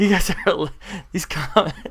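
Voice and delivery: talking through laughter. Reacting to the comments from viewers: laughing while talking. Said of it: "I'm just laughing at the comments".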